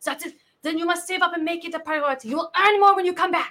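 put-on French accent. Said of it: "part of my French accent to the French people".

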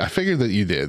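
ordinary talk

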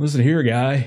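put-on transatlantic accent blended with surfer dude accent. Trying out how California characters will sound: transatlantic surfer dude blend. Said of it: "a mix of transatlantic slash surfer dude".

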